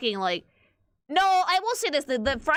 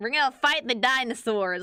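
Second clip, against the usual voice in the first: exaggerated, full-on Southern drawl. Imagining how the shop's owner sounds: put-on full Southern accent. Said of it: "with full-on Southern accent".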